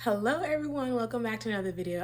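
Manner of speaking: out of breath. Opening a video right after running up the steps: out of breath. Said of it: "I am so out of breath".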